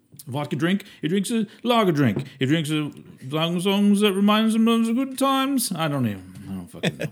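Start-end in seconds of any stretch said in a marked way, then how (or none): 0.3-5.7 put-on British accent, higher pitch. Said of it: "doing it like it's British".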